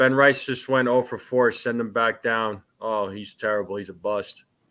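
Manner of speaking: ordinary delivery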